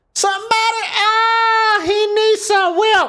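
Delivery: very high, slow put-on voice, long drawn-out oh. Doing a voice impression again, trying to do it better. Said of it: "I can do the voice better than that".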